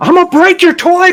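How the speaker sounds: very high, shrill, furious yell. In a role-play, a character yells at a woman, yelling. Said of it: "I'm gonna yell at her".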